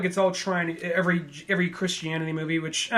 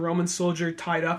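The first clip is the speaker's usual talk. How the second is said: ordinary talk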